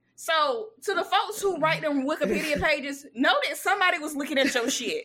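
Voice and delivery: ordinary talk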